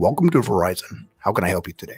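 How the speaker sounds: deep, very low professional customer-service phone voice. Recounting what they say on the phone, going into straight phone voice. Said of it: "you just went into like straight phone voice".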